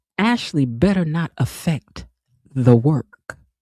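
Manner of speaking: put-on cold, icy tone, mock-chilly delivery. Quoting what a woman told a man at work, imitating a cold tone. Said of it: "in a cold tone".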